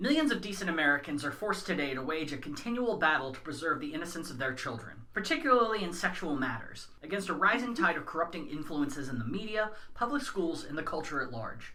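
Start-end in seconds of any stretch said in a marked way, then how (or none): none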